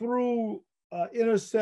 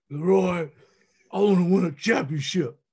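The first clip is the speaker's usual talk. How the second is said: raspy voice, rasped out louder. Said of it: "he told me in that raspy voice".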